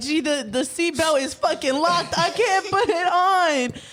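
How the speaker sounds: high, drawn-out, freaked-out panic. Retelling being in a high-speed chase: imitating own panicked voice. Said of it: "I'm over here freaking out".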